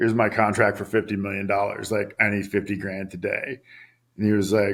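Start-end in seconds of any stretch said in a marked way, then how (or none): none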